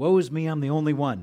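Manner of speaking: very loud, high crying out. Retelling Elijah running from Jezebel and Ahab: imitating Elijah crying out. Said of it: "he's crying out to the Lord".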